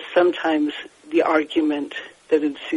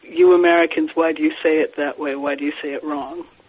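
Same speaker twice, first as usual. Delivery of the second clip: ordinary talk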